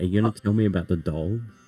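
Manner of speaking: hushed whisper. Playing a character who looks down at another and asks about the doll: whispering. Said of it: "I whisper again".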